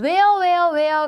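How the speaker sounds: "where" loud, slowed down and drawn out.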